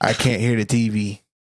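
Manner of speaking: normal talking voice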